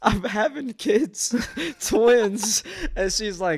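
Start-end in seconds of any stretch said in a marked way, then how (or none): 0.0-2.6 put-on giggling through words, very high, loud, slow. Retelling telling her mom about twins on the phone: retelling laughing while talking. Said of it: "I'm just laughing on the phone".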